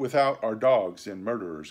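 ordinary talk

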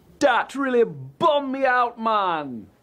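poor put-on Jamaican accent. Working through an awkward confession, slipping into a bad Jamaican accent.

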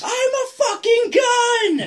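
very high, very slow, drawn-out shrill shout. Describing a talking shotgun in a video game, imitating a yelling game shotgun. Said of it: "yells like a pikey".

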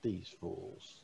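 orc voice, hushed and soft. Narrating a game scene, one of the orcs speaks; hushed orc voice. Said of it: "one of the orcs in a more of a hushed tone say".

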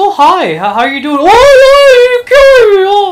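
mock chummy, cheerful, friendly voice. Playing a game, voicing the enemies as if greeting the player: voicing enemies greeting cheerfully. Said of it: "they're just here to greet me".

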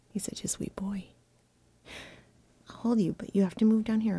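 soft, unvoiced whisper.

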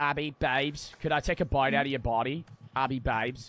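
poorly attempted Australian accent. Joking lines addressed to Abby during a game: attempted Australian accent. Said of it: "That's not even an Australian accent".

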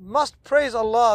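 ordinary talk

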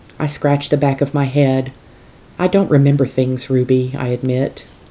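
ordinary delivery

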